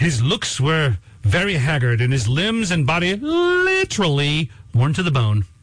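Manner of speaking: put-on period British accent, read aloud. Quoting a passage from Nicholas Nickleby, the speaker reads it as its author: Charles Dickens accent. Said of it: "He said it with that accent".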